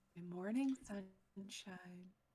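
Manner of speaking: soft, close-up half-whisper. Playing a character waking another character in bed: half-whisper in his ear. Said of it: "just kinda whisper in his ear".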